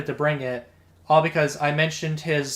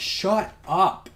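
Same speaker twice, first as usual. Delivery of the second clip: put-on hard, hostile, aggressive, forceful delivery; 4 semitones higher than usual. Speaker retells cutting off a man who kept interrupting: retelling an aggressive line. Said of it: "I said it aggressively".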